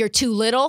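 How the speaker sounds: plain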